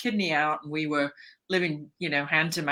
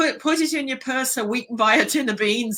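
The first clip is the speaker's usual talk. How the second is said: put-on loud child voice, higher and louder; 9 semitones higher, 4 dB louder than usual. Retelling a childhood call to Mummy: imitating own loud child voice. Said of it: "say in a very loud vo-, voice".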